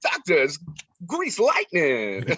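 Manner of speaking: animated voice, pitch swinging widely on every word. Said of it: "I did a [name] voice".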